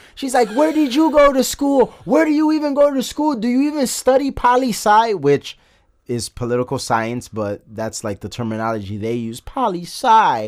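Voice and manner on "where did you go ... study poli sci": mock, shrill, very high, furious screaming rant. Retelling a debate where a girl got angry: imitating an angry scream. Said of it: "she started getting angry and screaming".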